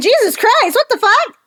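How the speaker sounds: mock appalled outcry, pitched very high. Pointing out a horrified onlooker, the speaker voices her reaction, imitating a horrified girl. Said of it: "Look how horrified this poor girl is. She's like".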